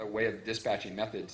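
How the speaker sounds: ordinary talk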